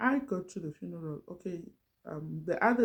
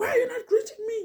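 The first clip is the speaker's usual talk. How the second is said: shrill, very high, raised screaming voice; 7 dB louder than usual. Retelling a colleague confronting her in front of others: imitating someone screaming at her. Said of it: "she was screaming at me".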